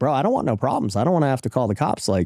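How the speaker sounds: ordinary talk, nothing marked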